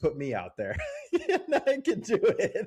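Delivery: mock extreme sarcasm, pitched way up, swooping. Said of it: "that's extreme sarcasm".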